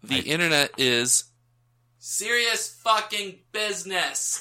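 very loud, high-pitched, all-out shout. Demonstrating how a line is meant to be said, shouting in all caps. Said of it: "read that as it's intended to be said".

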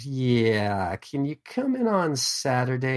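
slow sing-song voice, "yeah" stretched and swooping. Discussing Gary Cole's role, quote the voice he does in the office as Lumbergh. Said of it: "that voice that he does in the office".

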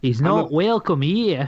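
New Zealand accent. Joking about someone who claims to be a Kiwi, in a Kiwi accent. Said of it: "That was my Kiwi accent".

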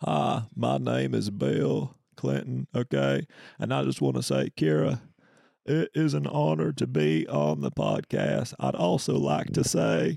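very slow, creaky, rough voice, every word drawn out. Playing an impression game, introducing himself to Kira: Bill Clinton impression. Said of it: "I'm gonna do an impression".

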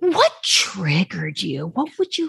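calm, gentle, soothing therapist-like voice. Retelling what Rinna kept asking someone, imitating her soft therapy voice. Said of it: "Rinna's in this like soft therapy this voice".

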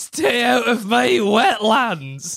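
high-pitched ogre voice. Joking about swamps and wetlands in a group, doing a Shrek impression. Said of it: "That's a Shrek impression".

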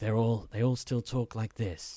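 put-on smooth, soft-spoken British accent. Describing the show's voice cast, imitating smooth soft-spoken British voice. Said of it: "British actors with these sort of smooth voices who just are very softly spoken".

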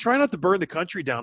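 plain

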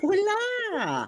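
very high, put-on, silly squeaky voice. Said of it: "I'm doing a weird high-pitched voice".

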